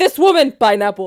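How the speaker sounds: put-on thick Mexican accent. Speaker quotes their dad while they walk the stores; thick Mexican accent. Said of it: "my dad has a very thick Mexican accent".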